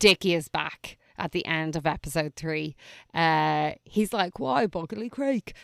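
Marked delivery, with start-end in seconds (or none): 4.4-5.5 put-on terrible, clumsy Australian accent, pitched up. Quoting a character from a show: terrible australian accent. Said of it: "that was a terrible Australian accent".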